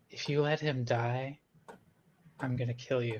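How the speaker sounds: quiet, hushed half-whisper under the breath. Walking up to another character in the game: half-whispering. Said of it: "walk up to Percy and whisper".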